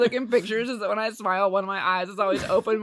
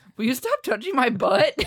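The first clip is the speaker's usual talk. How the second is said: put-on straight face about to crack into giggles; 2 semitones higher than usual. Retelling a bedtime complaint: imitating someone holding back a giggle. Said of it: "holding back a giggle".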